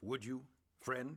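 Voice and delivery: normal talking voice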